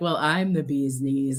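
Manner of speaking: cheeky, sassy, full-of-attitude tone, acted out. Voicing a man pictured on an art piece: sassy voice. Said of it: "they're just being so sassy".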